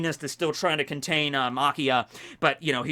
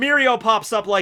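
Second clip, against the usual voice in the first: ordinary talk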